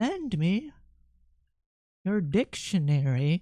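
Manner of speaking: witchy voice in a fixed, set rhythm. Speaker demonstrates the exact cadence for saying a phrase, in a witch-like voice. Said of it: "Do I sound like a witch doing that?".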